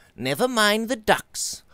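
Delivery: very high-pitched, impatient voice. A man cuts off another who is apologizing for ruined dishes, impatiently. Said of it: "Robert said impatiently".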